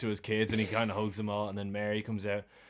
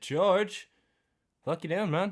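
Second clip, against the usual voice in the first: acted, loud, very high shout; 9 semitones higher, 5 dB louder than usual. Retelling a scene where Bert calls over to George, retelling Bert's shout. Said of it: "Bert just shouts over at him".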